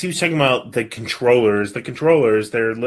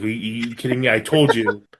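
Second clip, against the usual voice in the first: normal talking voice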